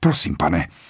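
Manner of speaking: muttered. Narrator reading Rogers's reply to Lombard's request for brandy, mumbling.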